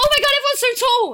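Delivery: shrill, very high, very loud fake sarcastic shock. Retelling how the speaker reacts to people calling them short, in mock-shocked sarcasm.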